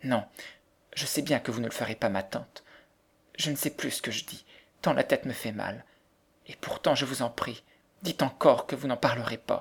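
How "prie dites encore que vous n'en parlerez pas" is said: ordinary delivery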